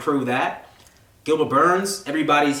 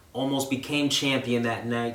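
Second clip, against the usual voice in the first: plain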